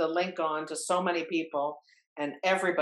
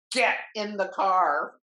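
mock, slow, drawn-out yell; 4 semitones higher, 4 dB louder than usual. Retelling a close call with moose, imitating a yell. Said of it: "Dad just yells at me".

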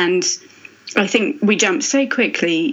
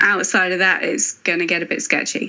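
ordinary talk

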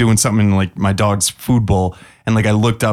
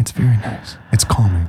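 put-on breathy radio voice. Hosts bring back a voice they haven't done in a long time, doing NPR voice. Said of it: "we've done NPR voice".

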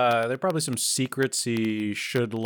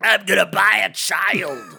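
loud, pitched-up, shouted alien voice; 9 semitones higher, 7 dB louder than usual. Riffing on the Jedi story with the others, doing a Watto impression. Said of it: "That's your best impression of Watto".

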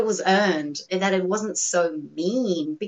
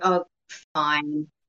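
put-on tired voice, much lower; 5 semitones lower than usual. Discussing how a woman sounds, acting out her reply, imitating a tired voice. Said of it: "she sounds tired".

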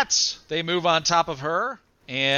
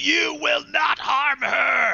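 very high, screeching demon cry; 9 semitones higher than usual. Narrating a fight, the speaker voices a devil as it attacks, screeching. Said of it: "this devil screeches and says".

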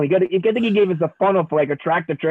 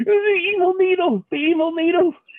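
play-acted cowering whimper, very high and frightened; 11 semitones higher than usual. Retelling how Ernie cried out in his sleep, speaker is imitating Ernie whimpering. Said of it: "cowering, rolled up in a ball, whimpering".

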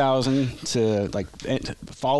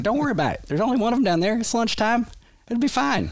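put-on Arkansas accent, pitch raised way up; 13 semitones higher than usual. Speaker retells what his first sergeant told him, in a put-on Arkansas accent. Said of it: "He's got this Arkansas accent".

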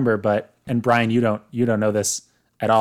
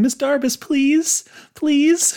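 put-on begging voice, much higher pitch. Recapping a scene, quoting a plea to Miss Darbus, imitating Gabriella's begging. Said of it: "Her little begging like, voice".

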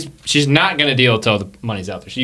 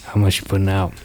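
talking around a cigarette, much lower pitch; 5 semitones lower than usual. Narrator voicing the dealer in the scene, cigarette dangling from mouth. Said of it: "She's got a cigarette in her mouth, kind of dangling".

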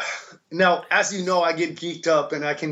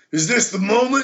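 high, hyped, dramatic wrestling-promo style delivery; 6 semitones higher than usual. Retelling a friend's line again, in a pro wrestling style: imitating Buckley's wrestling-style line. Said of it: "like a, a wrestling thing, like W W F".

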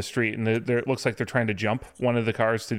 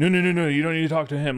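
play-acted protective, defensive, high dismissive tone; 6 semitones higher, 3 dB louder than usual. Retelling how a man told someone not to talk to him: imitating someone getting defensive. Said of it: "got really defensive".

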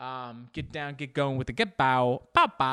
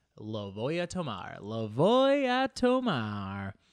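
sing-song Spanish in a put-on English accent; 4 semitones lower than usual. Podcast host playing with Spanish words for fun: Spanish with English accent. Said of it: "I like speaking in Spanish with an English accent".

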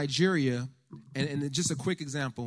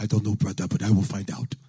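fake Nigerian accent, lower pitch; 5 semitones lower, 5 dB louder than usual. Retelling what the liaison told him at the gate, terrible nigerian accent. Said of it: "Terrible accent".

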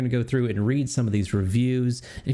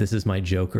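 ordinary delivery

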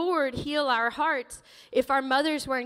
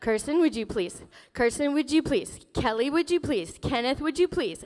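patient, nice, polite tone, repeated over and over. Recalling her mother's repeated requests to the kids; imitating mom asking nicely. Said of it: "she said to me nicely".

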